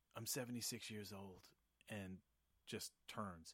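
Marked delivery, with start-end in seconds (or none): 0.2-1.5 put-on whisper, quieter. Retelling an exchange, voicing the other man's reply: retelling a whisper. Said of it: "he just kind of whispers like".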